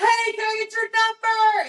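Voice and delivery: acted-out, very high-pitched passing holler. Acting out telling future kids how their dad approached: imitating a guy yelling. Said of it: "he just yelled".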